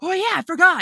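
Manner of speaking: little shocked exclamation, high and loud.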